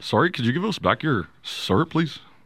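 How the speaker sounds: polite, put-on Canadian accent. Asking for stolen syrup back: put-on Canadian accent. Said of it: "Is that how you think Canadian people talk?".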